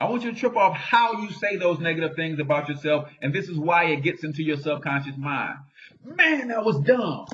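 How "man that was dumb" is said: high voice loaded with strong emotion. Demonstrating saying negative things about yourself: strong emotion. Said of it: "You see how much emotion I said that with?".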